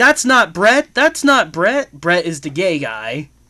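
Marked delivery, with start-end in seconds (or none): 0.0-1.9 mock, high, loud yelling, over and over. Retelling a movie scene where a fired girl yells: imitating someone yelling. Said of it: "starts yelling".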